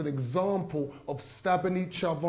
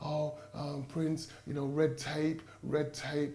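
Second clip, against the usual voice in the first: put-on hesitant mumbling and fumbling, slower; 5 dB quieter than usual. Retelling what a woman said when she phoned yesterday, imitating her mumbling and fumbling. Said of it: "She starts mumbling, fumbling".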